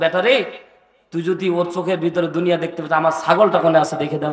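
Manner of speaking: usual speaking voice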